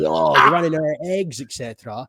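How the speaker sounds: ordinary delivery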